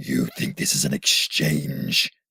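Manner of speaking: very low, growling ogre-like monster voice. A storyteller voices the blue Oni answering the children, growling monster voice. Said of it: "the blue Oni growled".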